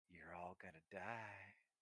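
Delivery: slow, wicked, menacing tone. Game master voicing Maven as she looks at the players, wicked grinning menace. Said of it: "this little wicked grin comes across Maven's face".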